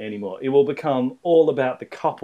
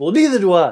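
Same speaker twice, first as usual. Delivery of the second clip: raised, mad, angry voice; 4 semitones higher, 5 dB louder than usual. Showing another speaker how to say the line: angry. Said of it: "Say it angry".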